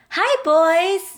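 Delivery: put-on loud, high, squeaky, girly voice. A girl greets the boys, catching their attention; squeaky voice. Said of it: "The squeaky voice got their attention".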